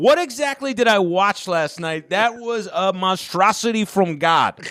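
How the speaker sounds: wild, high-pitched, drawn-out ranting. Retelling Italian callers phoning local radio after the Sopranos finale: imitating wild Italian radio caller. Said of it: "one call after another being like".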